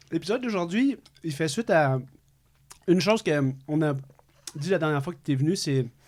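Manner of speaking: talking while chewing, mouth full. Host doing the episode intro with a mouth full of candy, talking with mouth full. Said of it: "la bouche pleine".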